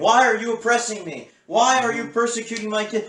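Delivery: put-on screaming. Mocking political opponents who complain about being held accountable: imitating screaming. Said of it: "they start screaming".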